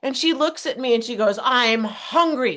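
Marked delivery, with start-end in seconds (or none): 1.4-2.6 mock-cranky, grumpy, sour put-on tone. Retelling her reply when he checked on her, mock-cranky tone. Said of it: "with this tone".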